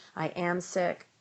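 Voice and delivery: ordinary talk, nothing marked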